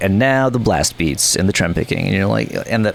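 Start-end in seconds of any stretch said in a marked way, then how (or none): none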